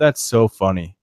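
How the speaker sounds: play-acted bone-dry, expressionless deadpan delivery. Retelling how someone reacted during a challenge; imitating a deadpan remark. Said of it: "like in a deadpan".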